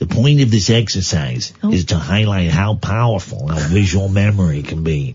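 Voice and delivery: slow, reading American accent. Reading a passage aloud when asked by another speaker: American accent. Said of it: "I'm going to do it in an American accent".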